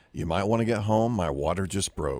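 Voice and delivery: cool, matter-of-fact, very calm, low and soft. Recalling a wife's phone call at work about lunchtime, retelling a very calm remark. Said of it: "she said very calmly".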